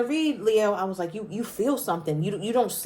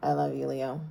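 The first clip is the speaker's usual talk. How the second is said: very low, soft, barely audible mumble; 8 semitones lower, 7 dB quieter than usual. Acting out how someone might say it to Leo, mimicking a mumble. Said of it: "Maybe they mumble like".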